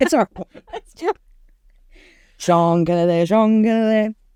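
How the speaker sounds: put-on Scottish accent, drawn-out, slow and high. Repeating a scottish man's name the way the group always says it: put-on scottish accent. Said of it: "We have to say his name like that because he's Scottish".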